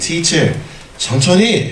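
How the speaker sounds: high, polite voice.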